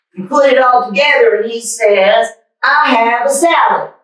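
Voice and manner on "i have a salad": loud, proud put-on Southern boy voice, higher. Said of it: "I'm gonna read like him the way his voice is".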